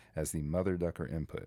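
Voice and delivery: ordinary talk, nothing marked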